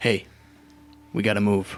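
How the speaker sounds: quiet, low put-on voice. Game narrator voices Grayson opening the tent to Rin and Seraphim, quietly under breath. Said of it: "pretty quietly under his breath".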